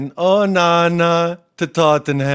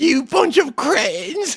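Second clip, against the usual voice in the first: put-on very high-pitched old grandma voice; 9 semitones higher than usual. Quoting what a man said about a goalkeeper, imitating an old grandma. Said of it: "he sounded like an old grandma".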